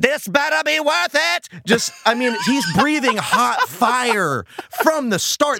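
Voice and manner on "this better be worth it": mock rough, high, full-lunged top-of-lungs yell. Describing a character's first line in an episode, retelling a top-of-lungs yell. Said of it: "Top of his lungs".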